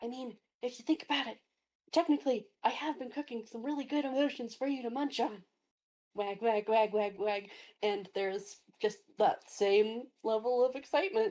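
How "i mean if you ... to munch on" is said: lowered voice, rattled off. In a dice game, the player voices a character who lowers his voice: lowered voice. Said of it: "Lowers his voice successfully".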